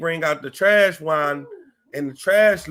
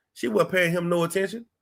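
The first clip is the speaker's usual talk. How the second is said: ordinary talk, nothing marked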